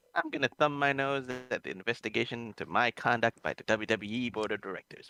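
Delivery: ordinary delivery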